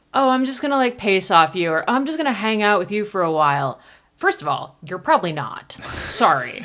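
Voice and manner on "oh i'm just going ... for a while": put-on patronizing tone, high and rushed. Telling men in the race to stop talking to women this way, mocking a patronizing voice. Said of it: "in a very patronizing voice".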